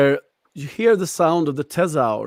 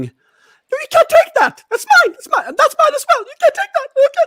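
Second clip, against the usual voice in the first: very high, shrill, bright scream, rising; 4 dB louder than usual. Voicing a character who screams as her things are taken: bright voice screaming. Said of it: "bright voice screaming".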